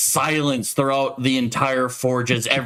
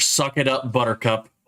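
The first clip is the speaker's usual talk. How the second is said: usual speaking voice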